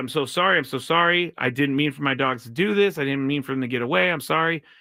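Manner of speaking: ordinary talk, nothing marked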